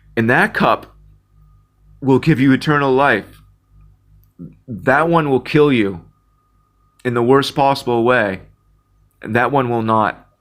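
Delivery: tearful, crying speech through tears. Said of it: "I don't know why I'm crying right now".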